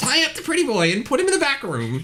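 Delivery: thin, nasal, very high voice. Narrator voicing an unseen speaker giving an order, in a thin, nasally voice. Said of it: "it's this thin, nasally voice that says".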